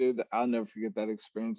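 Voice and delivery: ordinary talk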